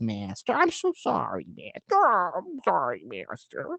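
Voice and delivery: parrot-like voice, pitch swinging up and down. Describing the giant cat-like Griffin in Quest for Camelot, imitating the Griffin's parrot-like voice. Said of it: "giant cat that talks like this".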